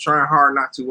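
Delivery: ordinary talk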